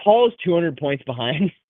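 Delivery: normal talking voice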